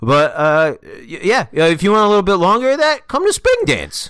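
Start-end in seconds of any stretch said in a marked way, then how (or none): 1.6-4.1 shouted, rising, high-pitched yell. Pitching a dance in character to another speaker, yelling. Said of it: "you yelling at me".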